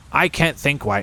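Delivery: ordinary delivery, nothing marked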